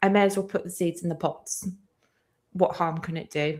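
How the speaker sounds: ordinary talk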